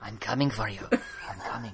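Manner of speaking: menacing, dangerous, hushed whisper. Imitating someone who talks like some sort of vampire, in a mock dangerous whisper. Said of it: "like dangerously whispery voice".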